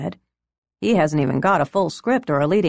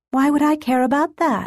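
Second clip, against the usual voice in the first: very high, snappy, quick voice; 10 semitones higher than usual. She answers a man from the entertainment industry, retorting. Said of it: "she retorted".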